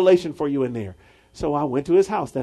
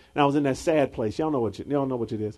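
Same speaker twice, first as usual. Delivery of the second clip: ordinary talk, nothing marked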